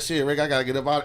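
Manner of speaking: normal talking voice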